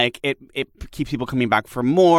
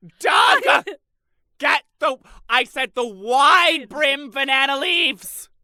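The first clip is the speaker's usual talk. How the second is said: mock screaming, higher pitch; 13 semitones higher than usual. Retelling a mom screaming at a dad about banana leaves: imitating mom screaming. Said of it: "screaming at my dad".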